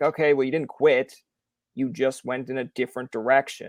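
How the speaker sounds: ordinary delivery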